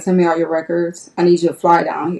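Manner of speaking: ordinary talk, nothing marked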